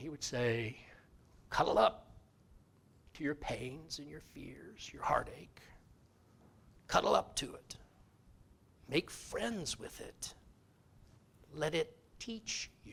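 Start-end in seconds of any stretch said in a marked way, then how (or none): 1.5-12.9 gravelly voice, partly whispered. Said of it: "in this gravelly voice".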